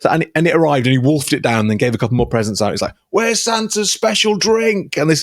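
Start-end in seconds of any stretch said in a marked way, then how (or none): 3.1-5.0 put-on slurred, drunk, high and dragging. Retelling a boat trip where Santa calls to the captain, imitating a very drunk Santa. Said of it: "Santa is paralytic drunk".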